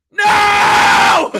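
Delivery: very loud, high-pitched, drawn-out screamed no. Retelling how a friend reacted in his seat to a stolen base, retelling a scream. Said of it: "I was screaming".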